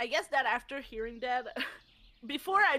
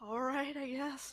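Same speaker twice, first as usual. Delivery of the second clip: soft, grudging, reluctant sigh; 6 dB quieter than usual. Voicing the captain agreeing to the plan: sighing reluctantly. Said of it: "gonna take a sigh and be like".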